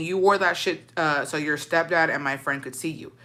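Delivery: ordinary delivery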